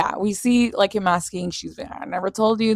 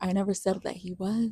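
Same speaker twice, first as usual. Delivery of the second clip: smug, pleased-with-herself, self-satisfied tone; 12 dB quieter than usual. Retelling a scene where she answers all smug: imitating a smug tone. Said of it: "she's over here all smug".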